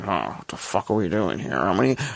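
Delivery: grumpy, griping movie-star voice. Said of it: "like, grumpy Harrison Ford".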